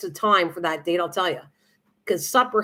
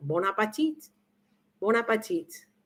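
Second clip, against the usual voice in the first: mock television cook accent; 6 dB quieter than usual. Imitating how a TV cook always said it: Julia Child accent. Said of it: "that accent, I wish I could do it".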